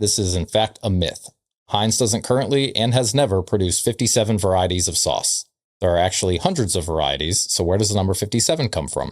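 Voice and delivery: ordinary delivery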